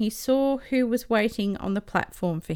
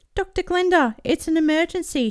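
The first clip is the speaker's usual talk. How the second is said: breathless shout, much higher pitch; 8 semitones higher, 4 dB louder than usual. Charisse runs up to dr. glinda with an emergency, shouted, out of breath. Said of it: "shouted Charisse, doubling over out of breath".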